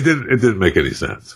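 ordinary talk

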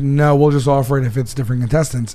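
ordinary talk

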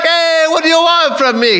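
put-on very high, overdone, thick Italian accent. Discussing the cast's accents, imitate Jared Leto's classic overdone Italian guy accent. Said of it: "doing your classic overdone Italian guy".

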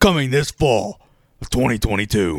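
attempted movie trailer narrator voice. Announcing a made-up film's release date, in a movie trailer guy voice. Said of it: "I don't have a good movie guy voice".

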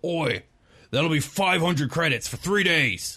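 high dwarf voice calling out.

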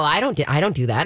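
ordinary talk, nothing marked

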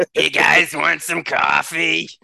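put-on loud, raspy New Jersey diner waitress voice. Roasting a wrestler at a roast: New Jersey diner waitress voice. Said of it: "I can't do that. After covid, I can't do that voice anymore".

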